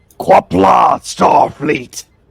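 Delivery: gravelly, rough, rasping voice over the radio. Voicing a radio signal from the planet's surface to the crew on the bridge, gravelly Klingon voice. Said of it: "gravelly voice come across saying".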